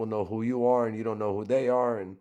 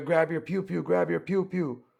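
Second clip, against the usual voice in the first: acted-out high, raised yell; 6 semitones higher than usual. Retelling a shootout on a livestream: imitating someone yelling to his boy. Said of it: "he's yelling to his boy".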